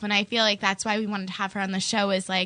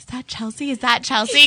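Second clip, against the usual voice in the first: put-on whisper, higher pitch; 3 semitones higher, 6 dB louder than usual. Retelling what people at the coffee shop say: imitating people whispering.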